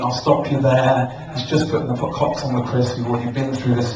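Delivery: plain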